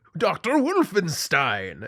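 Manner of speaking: dramatic, high, swooping movie announcer intro voice. Retelling how a guy in the movie does his line: imitating a movie character announcing. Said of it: "He's like".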